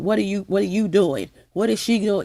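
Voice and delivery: ordinary delivery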